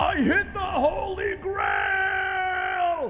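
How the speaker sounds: high, slow, loud thrilled shout.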